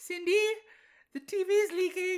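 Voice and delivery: very high, flat, almost deadpan. Fan recalling a scene from the third movie, imitating Brenda, almost deadpan. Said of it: "almost deadpan, but also at a clearly higher register".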